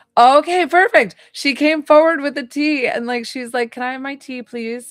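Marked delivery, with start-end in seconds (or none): 3.8-4.9 dignified, composed, regal, poised, small-voiced. Retelling a mother stepping forward with tea: imitating a regal, poised request. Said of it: "she felt very, um, regal and, like, poised about it".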